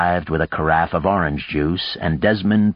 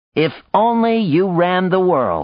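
very high cry bursting into laughter; 12 semitones higher than usual. Desmond replies to the other speaker, crying out and laughing. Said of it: "Desmond cried and started laughing again".

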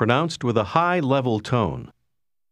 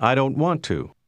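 usual speaking voice

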